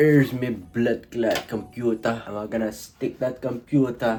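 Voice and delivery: terrible put-on Jamaican accent. Speaker setting up a computer on camera, in a terrible jamaican accent. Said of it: "Sorry about my terrible Jamaican accent".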